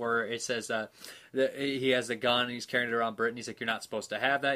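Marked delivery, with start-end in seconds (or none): none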